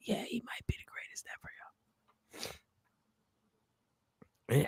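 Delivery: quiet, hushed, breathy whisper. Retelling a reply kept low so others nearby wouldn't overhear; whispering. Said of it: "I had to whisper too".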